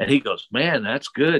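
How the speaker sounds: ordinary talk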